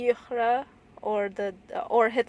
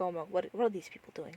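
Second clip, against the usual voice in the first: mock reserved disgust, quieter and faster; 4 semitones lower, 11 dB quieter than usual. Speaker describes a film character drinking and watching the scene, imitating reserved disgust. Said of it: "a bit of reservation and disgust".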